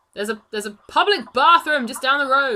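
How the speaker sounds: loud shouting voice. The narrator voices a guard reacting to a player holding a pot, the guard shouting. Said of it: "One of the other guards looks at you holding the pot and shouts".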